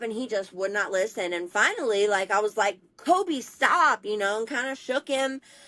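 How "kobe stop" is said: put-on high, raised yelling. Speaker recounts yelling at a nephew to stop throwing cat food, retelling a yell. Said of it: "I kept yelling at him like".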